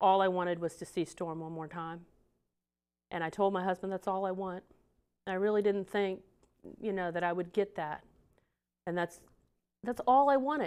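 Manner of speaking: choked up, voice catching with emotion. Telling how her dog died before Christmas, choked up. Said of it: "Now this is where I get choked up".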